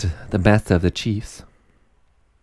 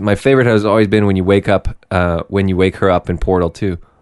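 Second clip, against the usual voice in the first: usual speaking voice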